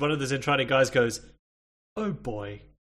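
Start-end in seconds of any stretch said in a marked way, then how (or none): 2.0-2.6 mild, put-upon, oh-bother style line reading. Retelling a line from an episode: Winnie the Pooh "Oh bother" reading. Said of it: "the most Winnie the Pooh, "Oh bother" kind of line reading".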